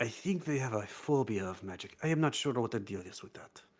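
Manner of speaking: speaking in a whisper. Leaning in to whisper a warning into another character's ear: whispering. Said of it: "Rudy's ear and whispered".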